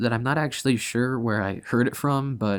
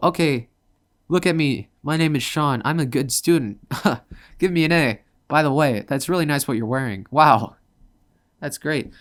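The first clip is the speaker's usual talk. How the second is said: fake cheerful, polite, put-on nice tone; 4 dB louder than usual. Acting out being falsely nice to teachers at school: putting on a fake nice act. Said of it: "you put on a show".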